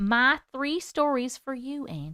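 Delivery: put-on Southern belle accent. Reading out a viewer's comment aloud: put-on southern accent. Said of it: "I'm Southern right now, can't stop".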